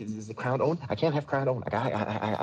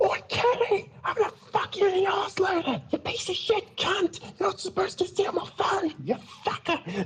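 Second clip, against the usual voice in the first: put-on, high-pitched, sudden shrill yell; 3 dB louder than usual. Retelling yelling out to convince a person someone else was involved, retelling a sudden yell. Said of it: "all of a sudden I just yell out".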